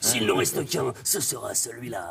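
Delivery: deep, low movie-trailer announcer voice. Talking about movie trailer narration, doing the Don LaFontaine trailer voice. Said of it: "la grosse voix".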